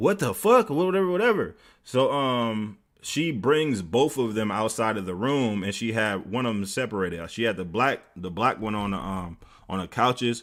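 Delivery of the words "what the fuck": mock, shrill, very high, loud yell. Retelling what the RA said on seeing the blood: imitating someone yelling. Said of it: "I could hear her in there yelling".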